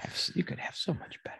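very soft, quiet whisper.

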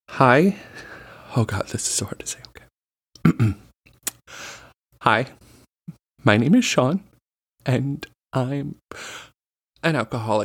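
slow, fake emotional delivery. Playing along with a mock AA meeting: mock AA meeting confession. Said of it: "really committing to the bit".

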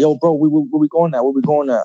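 mock frantic, panicked voice, words said twice. Retelling stopping at a corner while fleeing police: retelling own panicked words. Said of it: "I'm panicking because I'm like".

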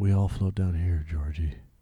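low, soft, subdued delivery. Showing how to deliver the movie line, a little deeper and softer. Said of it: "maybe a little bit deeper, maybe, you know, a little bit softer".

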